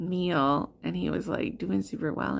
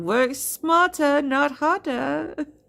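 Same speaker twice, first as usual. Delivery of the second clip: very slow, high, put-on Russian accent; 8 semitones higher, 7 dB louder than usual. Quoting three old Russian ladies the speaker passed, in their Russian accents. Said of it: "they did it in their Russian accents".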